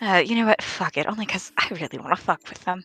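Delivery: very quiet, hushed, conspiratorial aside. Voicing a character speaking to the group: very quiet aside. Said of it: "very quietly to the group goes".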